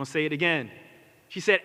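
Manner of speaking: normal talking voice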